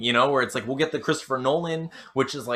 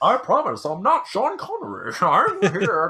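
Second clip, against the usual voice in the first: slow, drawn-out, swooping, pitched-up voice; 7 semitones higher, 3 dB louder than usual. Joking about how a movie villain sounds: Bane voice. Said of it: "He talks like this".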